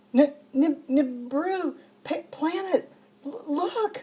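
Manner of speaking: acted stammering in shock. Retelling a dream, trying to tell her husband what was happening, imitating shocked stuttering. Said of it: "I sounded like this".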